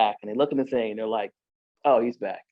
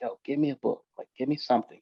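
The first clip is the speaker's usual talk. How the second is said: acted begging tone, quieter; 6 dB quieter than usual. Retelling begging a lady who brought pills, retelling a plea. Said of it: "like I beg her".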